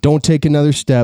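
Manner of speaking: put-on angry farmer voice, threatening tone. Retelling what an angry farmer said at his front door: imitating an angry farmer. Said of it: "just an angry old crabby farmer".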